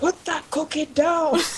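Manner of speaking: angry monster yelling. Voicing Godzilla throwing a tree at Cthulhu: Godzilla yelling. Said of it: "all yelling".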